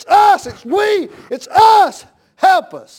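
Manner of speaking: loud, high, fervent, excited cry. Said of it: "why are you getting so excited".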